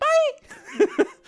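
very high "bye" with a voice crack. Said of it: "But that one was like".

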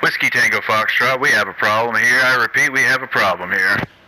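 radio transmission voice. Demonstrating a little trick by covering his mic, like a voice over a ham radio. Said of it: "like it was over a ham radio".

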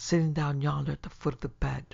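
plain reading voice

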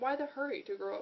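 ordinary delivery

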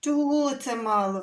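huffing, offended, hurt, huffy tone. A boy answers an uncle's teasing question, offended huffing. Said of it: "Ображено засопів Дениско".

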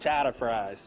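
attempted put-on Boston accent. Trying out a Boston accent on a menu special: put-on Boston accent. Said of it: "I'm trying to do my Boston accent".

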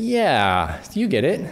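soft chuckle. A comics maker talking about how people react to their art, chuckling.

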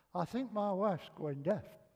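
ordinary talk, nothing marked

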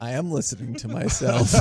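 put-on flat, deadpan voice. Retelling what another person said right before a drop, retelling a deadpan line. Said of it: "like deadpan".

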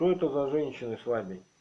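ordinary delivery, nothing marked

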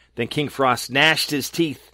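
ordinary delivery

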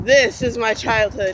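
usual speaking voice

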